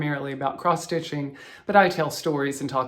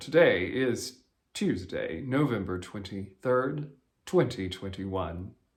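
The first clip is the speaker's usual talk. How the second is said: much lower, quieter voice; 6 semitones lower, 3 dB quieter than usual. Repeating the date from her Flosstube intro, speaking in a low register. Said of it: "I actually can speak down there".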